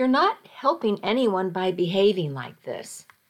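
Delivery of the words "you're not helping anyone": usual speaking voice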